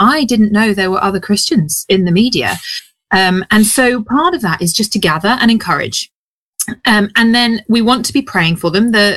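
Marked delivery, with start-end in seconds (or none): none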